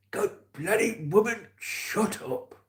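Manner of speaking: very high, drawn-out, fed-up grandad voice. Speaker recalling a man who ate mints when annoyed, imitating how he talked. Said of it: "He used to talk like this".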